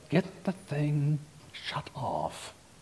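whispered through gritted, clenched teeth. Telling about a beeping reminder, the speaker quotes a family member: retelling words through clenched teeth. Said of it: "through clenched teeth".

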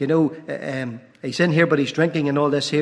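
ordinary talk

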